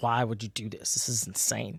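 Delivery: very quiet, low, hushed and sassy. Speaker retelling a story, acting out a woman questioning a man, imitating a sassy girl. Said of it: "She's like sassy and stuff".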